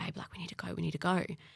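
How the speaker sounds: whispered, hushed, urgent, soft, breathy. Retelling how Mum woke them at night: imitating Mum whispering. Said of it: "she's whispering".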